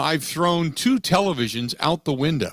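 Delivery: plain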